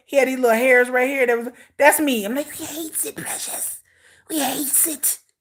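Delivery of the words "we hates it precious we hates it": creepy, slow, hushed, hissing creature whisper. Describing wearing a wig with hair in his face: Gollum voice. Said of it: "like Gollum is he look".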